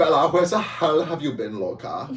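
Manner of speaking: loud, swooping, over-the-top fake German accent. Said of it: "was that probably offensive to the German people".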